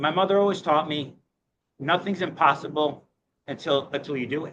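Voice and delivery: emotion catching in the throat. Recalling a mother's advice while telling how an office was found, a little choked up. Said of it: "sorry, a little choked up".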